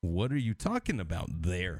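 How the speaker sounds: overdone, sing-song Canadian accent. Imitating how a lot of Canadians say a phrase, exaggerated Canadian accent. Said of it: "I'm going to exaggerate it for the sake of making a point. The way you and a lot of Canadians say".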